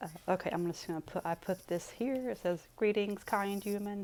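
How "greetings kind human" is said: put-on mechanical, showy, fancy robot voice. Reading a note that greets a kind human: fancy robot voice. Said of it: "my fancy robot voice".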